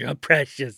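put-on creepy creature voice. Joking that someone looks like Gollum: Gollum voice. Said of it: "she kinda looks like Gollum".

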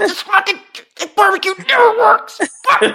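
shrill, very high, furious angry yelling rant. Imitating Spicer furious that the barbecue never works, put-on angry shouting. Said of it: "Start yelling at everybody".

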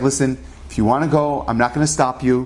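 usual speaking voice

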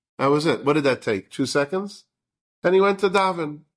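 plain

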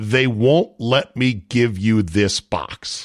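utter disgust, slow, words dragged out. Retelling what the installer said after the trips: imitating utter disgust. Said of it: "he says with utter disgust".

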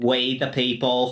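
Boston and Philadelphia accent. Asked how those accents would sound, speaker tries a stereotypical boston and philly accent. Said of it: "stereotypical Boston and Philly accents".

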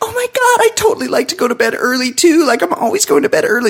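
very high, over-eager, fawning, gushing voice. Retelling a date where she agrees with everything: imitating annoying eager agreement. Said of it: "agreeing with everything he says in a really annoying way".

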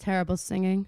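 low, flat, utterly expressionless deadpan tone. Retelling a funny clip, imitating Sam's totally deadpan delivery. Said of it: "Just like totally deadpan".

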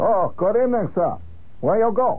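put-on Chinese accent. Retelling a cab ride, quoting the chinese cab driver, imitating his accent. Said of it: "and he had a great accent".

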